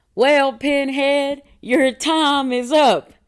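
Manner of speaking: high, loud, very slow, drawn-out country drawl. Retelling a SpongeBob episode scene, the speaker quotes a line in SpongeBob country accent. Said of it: "two country accents on SpongeBob".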